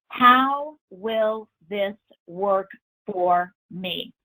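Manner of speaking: heavy stress on "how", hit hardest of all. Repeating a powerful question to an audience, with stress on how. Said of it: "Notice I emphasize the word how in this question".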